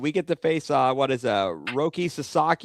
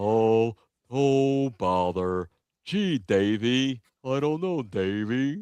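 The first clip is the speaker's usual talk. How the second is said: put-on cartoon donkey voice; 4 semitones lower than usual. Chatting about a ballgame with Davey, answering in an Eeyore voice. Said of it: "I thought you were doing Eeyore there".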